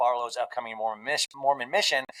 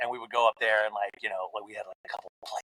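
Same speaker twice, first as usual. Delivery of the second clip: hushed half-whisper; 4 semitones lower, 3 dB quieter than usual. Remembering a buddy's treehouse next door, half-whispering. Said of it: "I don't know why I'm whispering".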